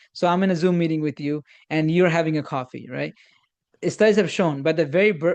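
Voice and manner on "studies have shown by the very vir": usual speaking voice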